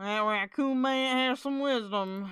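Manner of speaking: poorly done put-on Southern accent. Echoing the other speaker's remark, jokingly: bad Southern accent. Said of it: "that probably wasn't a good Southern accent there".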